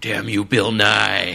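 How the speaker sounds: slow, creaky, mock delivery, dragged out slowly.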